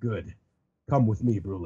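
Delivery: cool, low anime-hero voice. Retelling a scene where Katakuri answers a report, Katakuri's cool anime voice. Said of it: "with his cool anime voice says".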